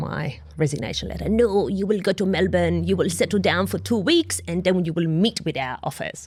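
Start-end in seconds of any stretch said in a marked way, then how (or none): 1.3-6.3 put-on French accent on English words. Retelling what the CEO said, imitating a French accent. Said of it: "in his best French accent".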